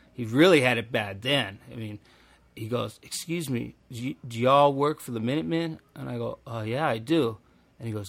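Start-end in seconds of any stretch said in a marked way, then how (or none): 3.1-5.8 put-on meek, timid, shy southern drawl. Retelling a man approaching them, the speaker imitates his meek southern drawl. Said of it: "in that southern drawl he had".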